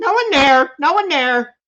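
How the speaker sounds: very high, tiny little bird voice, parroting. Voicing a tiny bird peeking over: voicing a tiny bird repeating words. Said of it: "tiny little bird head peek over and goes".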